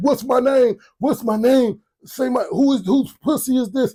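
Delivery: mock very high-pitched, repeated screaming. Retelling what a man shouted, imitating a man screaming. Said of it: "they're screaming".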